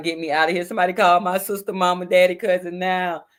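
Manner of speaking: put-on high, weepy, tearful, desperate crying voice. Retelling her past self in a jail holding cell, imitating herself crying. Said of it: "in the holding cells, crying".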